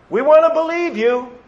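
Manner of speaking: sarcastic mock-sincere voice. Speaker voicing the self-righteous heart demanding another sign, sarcastically voicing a demand. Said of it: "I'm saying it very sarcastically".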